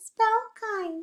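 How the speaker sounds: tiny, very high, squeaky little mouse voice. Leading a spelling call-and-response, spelling the word in a little mouse voice. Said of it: "In a little mouse voice".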